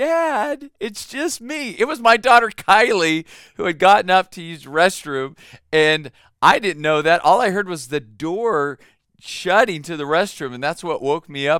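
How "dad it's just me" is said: very high, very slow, small faint little voice. A father retells his daughter answering his yell, imitating Kylie's small faint voice. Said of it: "this little small faint voice go".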